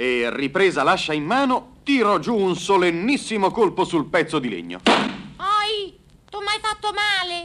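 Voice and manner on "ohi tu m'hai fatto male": little voice shouting, complaining, much higher, slower. After an axe blow to the piece of wood, the little voice shouts, complaining. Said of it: "Gridò rammaricandosi la solita vocina".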